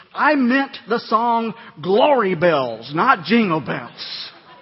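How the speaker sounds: stern, slow, scolding voice. Retelling what a lady said to him after a funeral, mock-scolding voice. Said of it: "she said in a scolding voice".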